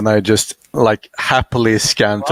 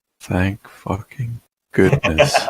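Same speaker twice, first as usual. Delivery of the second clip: quietly muttered under the breath; 4 dB quieter than usual. Reacting in character to a giant explosion: muttered under breath. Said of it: "under my breath".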